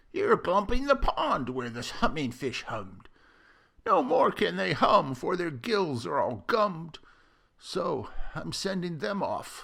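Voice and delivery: high, loud, snapping, swooping croak. Reading a story aloud, voicing the Lorax as he scolds: snapping, croaky Lorax voice. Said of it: ""I'm the [name] who speaks for the trees, / He snapped, / I was fixing some pipes when that old nuisance [name] came back with more gripes. / he cried with a cruffulous croak. / snapped the [name]".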